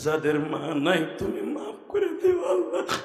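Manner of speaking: soft, tearful voice with a sob breaking through.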